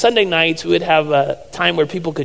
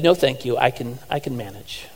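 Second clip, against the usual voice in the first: put-on refined British lady's accent, quieter; 4 semitones lower, 7 dB quieter than usual. Retelling a lady's reply when offered help feeding herself, imitating Lucy's refined British accent. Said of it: "a very um, refined British accent said".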